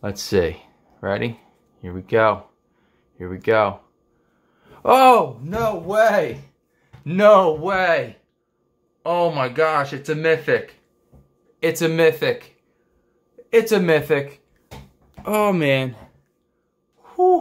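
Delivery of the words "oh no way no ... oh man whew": trembling, high, drawn-out excited disbelief. Opening a card pack and finding a mythic: excited and shaking. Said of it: "Look, I'm shaking".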